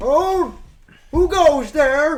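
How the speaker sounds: put-on very high, very loud elderly calling voice. The storyteller voices an unseen figure calling out from behind a force field, in an older voice. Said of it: "kind of like an older voice go".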